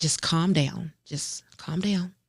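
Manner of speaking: anxious, panicked talking to oneself. Retelling driving toward an accident scene: retelling panicked self-calming. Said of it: "and I was panicking".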